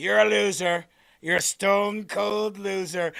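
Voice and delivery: slow delivery, every word drawn out. Retelling a meme where a figure taunts a sleeper: imitating Donald Trump. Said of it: "Donald Trump's silhouette is sitting there, and he's like".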